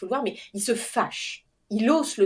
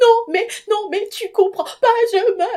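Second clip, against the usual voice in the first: play-acted, tearful, very high-pitched, drawn-out sob-talk; 11 semitones higher, 7 dB louder than usual. Retelling her reply to her husband, imitating her own sobbing. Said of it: "je le regarde et je fonds en larmes".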